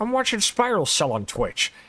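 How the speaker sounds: high, swooping cartoon dad voice. Describing a clip used as a live notification, doing the Peter Griffin AI voice. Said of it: "a Peter Griffin A I voice just goes".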